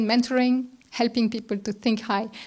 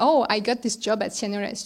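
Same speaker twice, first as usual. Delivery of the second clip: ordinary delivery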